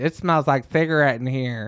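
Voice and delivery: griping, put-out complaining voice. Imitating Ashley complaining about cigarette smell in the truck: impression of Ashley complaining. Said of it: "That's a pretty spot on impression".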